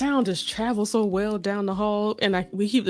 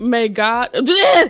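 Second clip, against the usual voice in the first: shouting, louder; 2 semitones higher, 10 dB louder than usual. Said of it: "I'm sorry for yelling in y'all ear".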